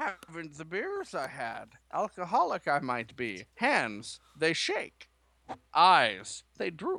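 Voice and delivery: put-on swooping, sing-song, drunk wise-creature voice. Riffing on Yoda's way of speaking: drunk Yoda impression. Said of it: "if you got Yoda drunk".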